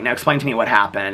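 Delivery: plain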